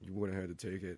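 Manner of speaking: very hushed, low, quiet mutter under the breath. Retelling what a lady said as she walked out, muttering under her breath. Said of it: "as she's walking out under her breath".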